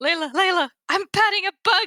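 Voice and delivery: high, loud, excited squeal.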